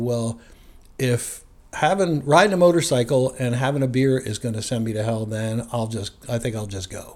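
ordinary talk

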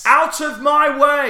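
very high, very slow, slow-motion heroic yell. Mocking a would-be rescuer on the train: imitating a heroic shout. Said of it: "shouting something like".

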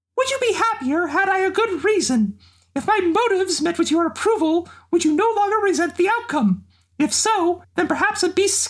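voice done as a cartoon mouse. Reading Xeno's speeches as Mickey Mouse: Mickey Mouse voice. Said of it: "here's a few Xeno speeches with Mickey Mouse".

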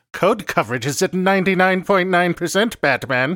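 cartoonish villain voice. A coworker plays a Batman villain called the Laptopler, taunting Batman: Laptopler Batman-villain voice. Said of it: "you sound like some sort of Batman villain".

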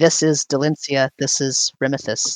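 ordinary talk, nothing marked

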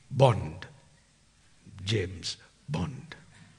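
half-hearted, weak, low and soft hero voice. Quoting a film character's line, admitting it doesn't sound like him: weak James Bond impression. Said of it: "Doesn't sound like that, right?".

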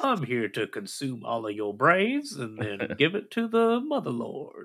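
put-on alien monster spider voice. Imagining the giant space spider they will fight: giant space spider voice. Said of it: "that has this voice".

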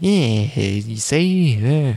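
silly exaggerated old-timey New York accent. Mimicking how everyone talks in a dub: silly old-timey New York accent. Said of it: "the New York accents in this dub are so silly, they're almost old timey, where everyone's just like".

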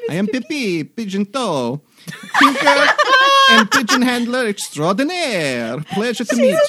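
put-on very high, loud, swooping, sing-song French accent. Introducing the new character to the group, in Pippi's French accent. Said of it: "the French accent".

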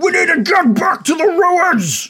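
very high-pitched hobgoblin voice shout. Narrating a scene, one hobgoblin grabs another by the collar: hobgoblin shouting. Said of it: "and shouts to him".

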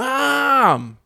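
put-on child voice yelling. Retelling how a child called his mom from downstairs: imitating a child yelling. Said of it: "turns around and yells".

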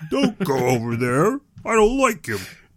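high-pitched, pouty, sulking voice. Retelling a saga, voicing the character refusing the feast invitation, mock-pouty Jokul voice. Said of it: "That's your Jokul voice?".

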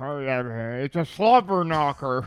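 slow announcer call with long, stretched "hey". Imitating a wrestling commentator on WWF: Jim Ross impression. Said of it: "like when Jim Ross talks".

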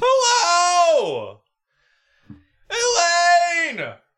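"hello" stretched out, very high and swooping. Greeting the co-host on a podcast: Jerry Seinfeld impression. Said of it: "I'm picking up on the Jerry tone there".

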